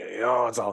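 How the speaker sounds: put-on deep gargly voice. Retelling a movie scene of an apology: Nick Nolte deep gargly voice. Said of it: "Nick Nolte's got that deep, gargly voice".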